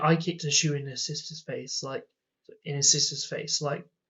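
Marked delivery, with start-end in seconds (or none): none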